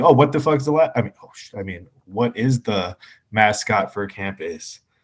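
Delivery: ordinary talk, nothing marked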